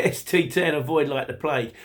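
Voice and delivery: ordinary talk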